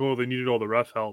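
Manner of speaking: normal talking voice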